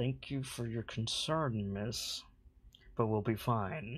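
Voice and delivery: soft, polite-sounding speech through gritted teeth. A character answers a distrustful stranger's concern, through slightly gritted teeth. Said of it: "Through slight gritted teeth".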